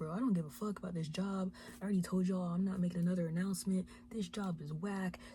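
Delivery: angry, fed-up, cussing rant. Retelling how a girl at work told off the boss: mock-angry cussing rant. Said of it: "she was cussing both of them out".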